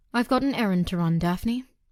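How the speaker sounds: plain reading voice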